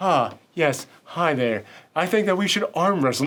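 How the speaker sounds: soft, lilting put-on voice. Imitating a character challenging someone to arm wrestle: soft-spoken lilting Elijah Wood voice. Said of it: "very, like, soft-spoken".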